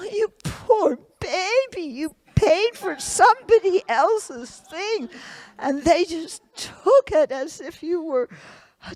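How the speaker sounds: high, exaggerated, sarcastic, over-the-top mock sympathy. Showing how to respond over the top, with over-the-top mock pity. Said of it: "just do it over the top, you know, like I did for you".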